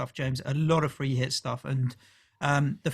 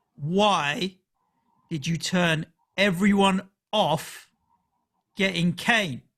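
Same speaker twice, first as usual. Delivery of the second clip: put-on slow, pointed, accusing tone with long drawn-out why; 4 semitones higher than usual. Reading out a listener's question aimed at the co-host: imitating David's pointed tone. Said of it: "in the tone of voice that I think David is asking".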